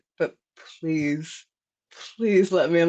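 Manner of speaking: mock pleading, begging tone. Retelling asking a lady at the door to be let in: retelling own begging.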